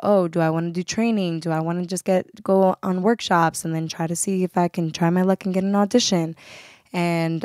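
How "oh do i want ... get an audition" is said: ordinary delivery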